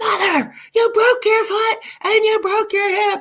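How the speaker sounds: screamed at a very high pitch. Retelling how her daughter behind the X-ray wall screamed: imitating daughter screaming. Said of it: "she screams at me".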